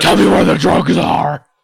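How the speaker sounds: loud, rough superhero growl. Two speakers riffing on Batman impressions; one tries Clint Eastwood as Batman. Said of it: "Clint Eastwood as Batman".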